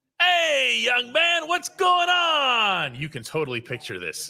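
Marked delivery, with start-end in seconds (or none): 0.2-3.0 very high, slow barked call, "on" stretched. Retelling how Cam came off and greeted him, imitating Cam barking out. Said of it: "Cam just barks out".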